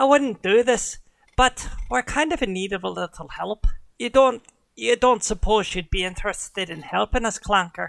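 put-on Irish accent on every word. A game narrator voices Drace asking the party for help, Drace in an Irish accent. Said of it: "I'm straight Irish now".

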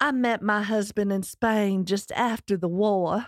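put-on Georgia-style Southern belle accent. Telling how she met her husband, in a Scarlett O'Hara Southern belle accent. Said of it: "in the best Scarlett O'Hara voice".

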